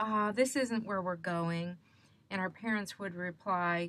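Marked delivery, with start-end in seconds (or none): 0.0-1.8 crestfallen, disappointed, deflated tone. Retelling what the kids said on arriving somewhere, in a mock-disappointed voice. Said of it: "in a disappointed voice".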